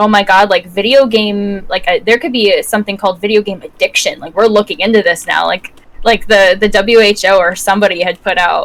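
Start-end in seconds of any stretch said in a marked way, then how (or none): none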